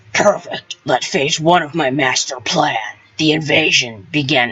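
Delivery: horrible, bad put-on monster king voice. Answering a report that the airship is ready, in a bad Bowser voice. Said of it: "That's a horrible voice for Bowser".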